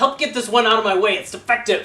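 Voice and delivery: very loud, high-pitched shout. Game master voices a frustrated character calling to the Warforged outside: shouting. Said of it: "he basically like shouts".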